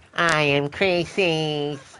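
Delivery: high-pitched, irritating voice. Mocking a game cultist's voice: imitating Croesus's annoying voice. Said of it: "the cultist who has the most annoying voice".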